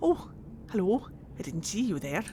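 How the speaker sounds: put-on light, soft Welsh accent. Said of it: "Welsh twinge to her voice".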